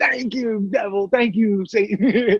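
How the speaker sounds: high, dead-serious, unhinged, grateful tone. Retelling a prank call, imitating a caller who was out of his mind. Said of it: "he was like".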